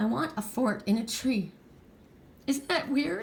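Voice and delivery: tearful, emotional, crying while speaking. Speaker unexpectedly getting emotional mid-talk, crying. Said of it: "Why am I crying?".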